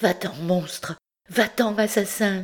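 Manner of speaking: trembling voice of fury and terror. Woken in bed, a woman confronts the priest holding her, trembling, hushed voice. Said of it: "d'une voix tremblante et basse".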